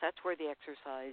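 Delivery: ordinary talk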